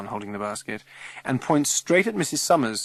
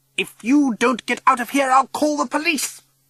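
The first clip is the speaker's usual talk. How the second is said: very high, shrill fury through clenched teeth; 12 semitones higher, 6 dB louder than usual. The chairwoman, Mrs Summers, threatens to call the police: furious, through clenched teeth. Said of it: "grits Missus Summers through her clenched teeth, fury".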